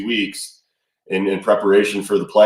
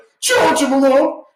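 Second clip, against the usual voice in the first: mock yelling, pitched higher. Retelling a foul call during the game: imitating yelling at the TV. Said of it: "I was yelling at the T V".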